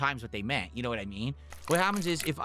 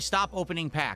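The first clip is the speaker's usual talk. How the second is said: ordinary talk, nothing marked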